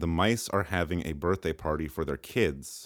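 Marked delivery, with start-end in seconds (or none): none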